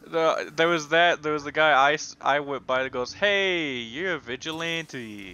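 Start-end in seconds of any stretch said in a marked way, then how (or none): 3.1-5.3 very slow, offhand, nonchalant casual drawl. Retelling what a passing civilian said: imitating a nonchalant civilian. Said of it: "that very nonchalant civilian".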